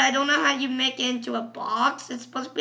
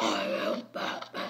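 dark, hushed, breathy whispered voice; 8 dB quieter than usual. Demonstrating different ways to say a line, in a dark Batman voice. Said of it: "There's a dark voice too".

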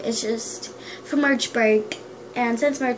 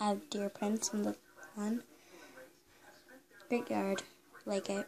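half-whispered, barely above a breath, soft and hushed; 2 semitones lower, 14 dB quieter than usual. Filming a hotel room tour while someone sleeps, half-whispering. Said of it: "I'm whispering because Trayson is sleeping".

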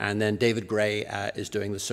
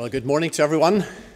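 slightly breathless and winded, much higher; 5 semitones higher, 5 dB louder than usual. Greeting everyone at the start after running here, a bit out of breath. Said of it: "sorry if I seem a bit out of breath".

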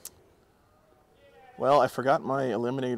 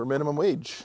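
plain

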